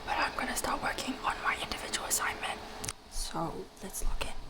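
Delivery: hushed whisper. Starting an assignment while their dad is sleeping, whispering. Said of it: "I'm whispering because my dad is sleeping".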